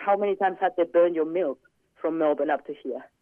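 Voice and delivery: ordinary talk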